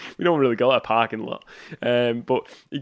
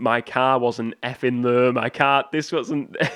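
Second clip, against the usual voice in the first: ordinary delivery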